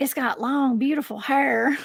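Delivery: put-on strong Southern gentleman accent. Recalling a video of a Bigfoot: imitating Tim Pool's Southern accent. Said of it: "all I could think of was Tim Pool saying".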